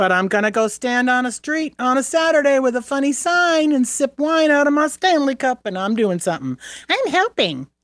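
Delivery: put-on high, dopey, childlike cartoon kid voice. Mocking people who go to rallies, in Ralph Wiggum voice. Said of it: "There's my Ralph Wiggum's voice".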